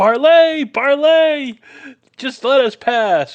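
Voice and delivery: very high, loud yell. In a game, a player's character calls out to approaching geese: shouting. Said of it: "I'm gonna start shouting".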